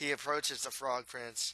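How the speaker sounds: ordinary delivery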